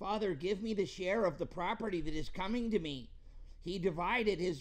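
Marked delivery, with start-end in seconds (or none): 0.0-3.1 mock whiny, complaining, high and loud. Retelling the younger son's demand to his father in put-on whiny voice. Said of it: "I should put this in a whiny voice because this is the way he was".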